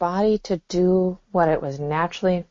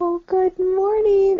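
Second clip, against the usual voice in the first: very high, sugary, sweet voice; 13 semitones higher than usual. Imagining a mother waking a child in the morning: imitating mom's sweet wake-up voice. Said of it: "all the beautiful, sweet words".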